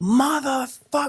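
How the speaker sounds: piercing, very high, shrill, angry scream. Telling about a man running across the street toward cops, imitating him screaming. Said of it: "Like he's screaming".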